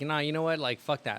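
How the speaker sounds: normal talking voice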